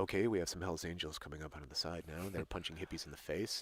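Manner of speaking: hushed, very soft, low play-by-play murmur. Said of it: "just talking softly about what's going on".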